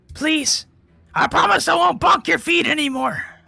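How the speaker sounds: creature voice, pleading and begging. Voicing a creature that calls out to a player: bound creature begging. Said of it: "this thing start to speak up and talk to you in common".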